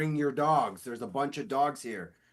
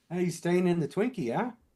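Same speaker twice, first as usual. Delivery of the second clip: fast, awful put-on New Zealand accent; 4 semitones higher than usual. Imagining locals chatting, doing a bad New Zealand accent impression. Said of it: "I don't want to do a New Zealand impression".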